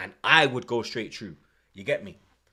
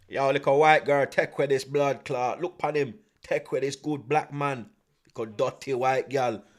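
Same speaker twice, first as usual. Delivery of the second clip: put-on Jamaican accent, woman's voice. Retelling what a jealous Jamaican woman said about a couple, in a put-on Jamaican accent. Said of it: "The Jamaican".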